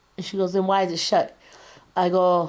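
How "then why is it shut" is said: usual speaking voice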